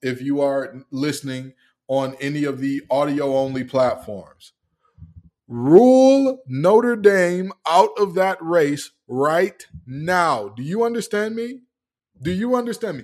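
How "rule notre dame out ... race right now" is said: very loud, slow, drawn-out, emphatic delivery. Speaker addressing listeners on audio-only platforms, very loud. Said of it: "I'm gonna say it very loudly into the mic".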